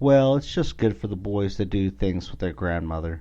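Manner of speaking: ordinary delivery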